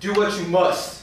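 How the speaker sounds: slow, loud, bellowing yell. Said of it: "I yell out for the whole party to hear".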